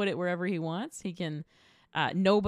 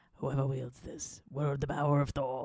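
whispered put-on voice, much lower; 5 semitones lower than usual. Retelling Anthony Hopkins's line to Mjolnir in Thor, Anthony Hopkins ASMR whisper. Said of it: "he's whispering, like doing ASMR to Mjolnir".

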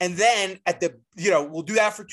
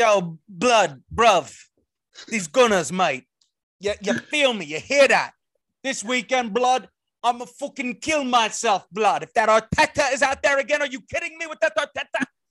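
put-on Cockney accent, pitched high; 5 semitones higher, 3 dB louder than usual. Asked what a fictional Arsenal fan sounds like, mock Cockney accent. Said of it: "it's more like Cockney".

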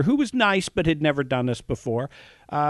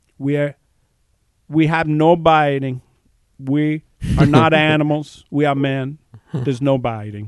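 slow, put-on Brazilian accent. Retelling what a man said when he stood up, put-on Arnold-like Brazilian accent. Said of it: "I'll try this in my accent".

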